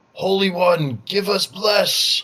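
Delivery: high, slow, loud shouted calling out.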